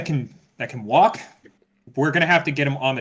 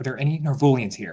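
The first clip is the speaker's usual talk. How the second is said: hushed, softly whispered. In a tabletop game, Clara's player asks the amputee man something, whispering. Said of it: "She whispers".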